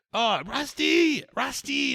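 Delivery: very high-pitched calling-out yell. Retelling the owner calling for his lost dog: imitating someone yelling for a dog. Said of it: "he's yelling out for the dog".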